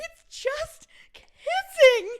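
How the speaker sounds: tearful, very high, very loud crying whine. Retelling mom's confrontation on the way to the cabin, imitating own past crying. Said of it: "I'm crying".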